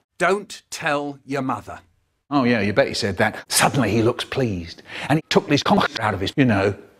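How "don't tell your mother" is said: plain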